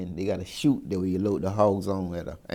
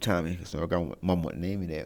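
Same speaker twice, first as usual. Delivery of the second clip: plain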